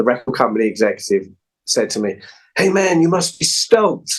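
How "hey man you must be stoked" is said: amateurish attempted American accent, pitched up. Quoting a record company executive's words to him, imitating Matt's American accent. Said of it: "excuse my attempt at an American accent".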